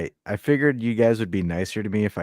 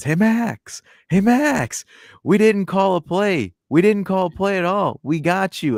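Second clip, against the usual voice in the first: shrill, very high, loud, drawn-out taunting yell; 11 semitones higher, 6 dB louder than usual. Retelling how he taunted a player from the sidelines: imitating someone yelling. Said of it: "he's yelling out loud from the sidelines".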